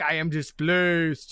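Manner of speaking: low, deep monster voice. Narrating a tabletop game fight, voicing the displacer beast: displacer beast voice. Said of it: "the displacer beast is like".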